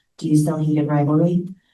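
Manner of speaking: put-on whispered delivery. Retelling a customer's phone call about a book: imitating a whisper. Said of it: "kind of in a whisper tone".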